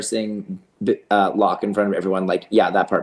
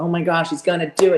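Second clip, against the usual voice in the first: mock excitement, higher pitch; 8 semitones higher than usual. Mocking the onlookers who brought kids to watch: imitating excited onlookers.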